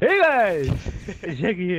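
put-on burst-out shout. Retelling how the other speaker opens the video: imitating a shouted intro. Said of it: "when you just shout at the beginning".

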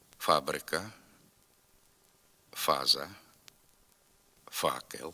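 slow, spaced drill with long pauses. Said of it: "Тепер повторюйте за мною".

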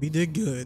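voice cracking and breaking. Reacting after finishing a task in the game, voice cracking. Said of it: "Voice crack".

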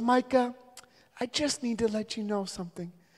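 very high, gracious mom voice. Retelling what a mom at church told him: imitating a gracious mom. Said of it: "real graciously, she goes".

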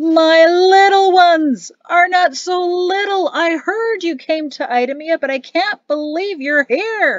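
big, booming, high-pitched calling voice. Narrator reads a man calling out from behind another man, in a booming voice. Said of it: "a booming voice from behind the man".

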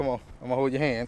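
ordinary delivery

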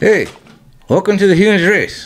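ventriloquist dummy voice. Podcast hosts trade ventriloquist attempts and he shows his: ventriloquist voice, lips still. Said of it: "No movage, right?".

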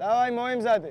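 high, loud, coach-style shouted calls.

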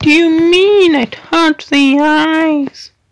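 high, loud, slow funny voice. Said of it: "That was a funny voice".

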